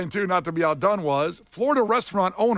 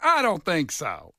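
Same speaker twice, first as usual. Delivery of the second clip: put-on slow elderly woman's voice. Wondering what the license plate said: imitating a seventy-seven-year-old woman. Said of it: "what the plate said that she goes".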